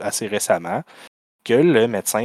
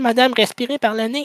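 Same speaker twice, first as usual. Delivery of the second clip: mock shouting at much higher pitch, slower pace; 4 dB louder than usual. Speaker acting out one of the doctors treating a woman, retelling a doctor's shout. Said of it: "qui crie".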